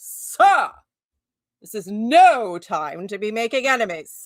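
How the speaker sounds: put-on very slow, loud, swooping, grandly theatrical delivery. Acting out a deathbed quote after a listener's comment: dramatic Voltaire delivery. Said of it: "he probably said it very dramatically".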